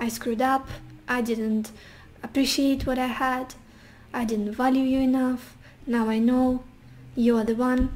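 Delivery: ordinary talk, nothing marked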